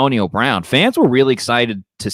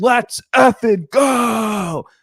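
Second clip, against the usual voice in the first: mock very high shrieking yell, "go" drawn out; 11 semitones higher than usual. Retelling a player's outburst during drills: imitating Antonio Brown screaming. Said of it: "scream at the top of his lungs".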